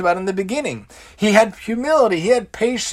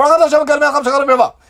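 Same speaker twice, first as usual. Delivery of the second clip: fast, rattled-off mumble with words blurred together; 7 semitones higher, 6 dB louder than usual. Demonstrating how a hebrew blessing often gets said: fast mumbled blessing. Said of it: "mumble through the brachas and we say it so close, so fast".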